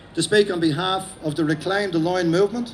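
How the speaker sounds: usual speaking voice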